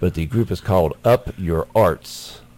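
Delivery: slow, careful enunciation, each word measured out. Speaker, wary of getting caught saying something bad, names a group: said slowly. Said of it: "I gotta say this slowly".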